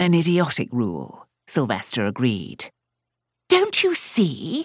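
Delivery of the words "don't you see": insistent, demanding, very high-pitched cry. A mother presses her son in conversation, demanding. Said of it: "His mother demanded".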